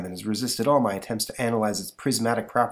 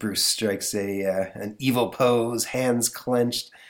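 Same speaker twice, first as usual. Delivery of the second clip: plain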